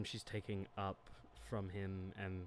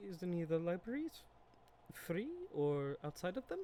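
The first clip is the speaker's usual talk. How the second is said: trembling, shaky, very high-pitched voice; 9 semitones higher than usual. In a role-play, the player's character speaks up with a shaky voice. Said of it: "she kind of gets like a shaky voice".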